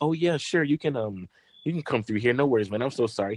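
put-on British-accented voice. Retelling own words to a man at a bar: imitating own british accent. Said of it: "I was speaking in a British accent the whole night".

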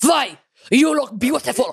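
put-on Russian accent with a touch of pirate. Trying out accents with others, a speaker repeats the line in a put-on russian accent. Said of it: "That's more Russian".

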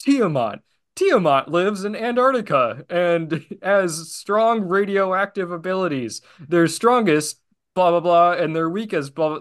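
synthetic, robotic AI announcer voice. Describing a show's monster-profile scene, in a Power Rangers AI voice. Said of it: "with an AI voice going".

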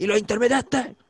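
play-acted, high, loud shout. Retelling yelling at another driver through the lowered window, retelling a shout. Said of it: "Estaba con el vidrio abajo y le grité".

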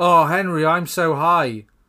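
very loud, high, drawn-out, belted sitcom-style delivery. Acting out a skit scene as Rob Schneider: Rob Schneider impression. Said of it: "I'm gonna be Rob Schneider".

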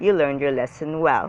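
plain

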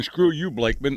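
ordinary talk, nothing marked

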